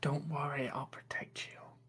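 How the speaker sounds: very soft, hushed whisper. Voicing an invisible character reassuring Phaedra: whispering in character. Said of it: "[name]'s invisible whisper".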